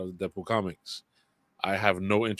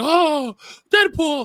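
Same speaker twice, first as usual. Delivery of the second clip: mock over-the-top excitement, higher and louder; 11 dB louder than usual. Imitating a guy reacting to a trailer on TikTok: over-the-top excited reacting. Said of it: "Totally over the top bullshit acting".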